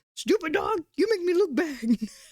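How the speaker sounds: high cartoon voice with a scolding, berating tone. Imagining a character scolding another as a dog: Eustace voice. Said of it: "talking like a Eustace from Courage the Cowardly Dog".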